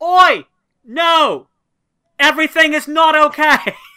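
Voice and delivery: shrill, very loud, high-pitched yell. Seeing a companion run toward them, a player's character calls out, yelling. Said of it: "I look up and I see Travis and I yell".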